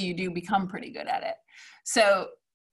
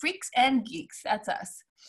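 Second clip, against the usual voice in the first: very proud, bursting with pride; 3 semitones higher, 4 dB quieter than usual. Showing students another take on a documentary title: very proud. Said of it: "might be very proud too".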